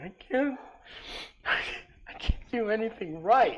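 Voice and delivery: very high, drawn-out, slow bawling sob. Voicing a character who stops near a tree, bawling: crying character. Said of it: "he's just bawling his eye out".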